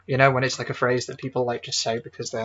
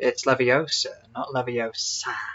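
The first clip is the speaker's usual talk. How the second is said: mock sassy, put-down tone. Speaker mocking a game character's accent, mock-sassy imitation. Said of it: "He just sounded like sassy".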